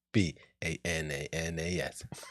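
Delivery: low, slow, quiet spelling, letter by letter. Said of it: "That's bananas".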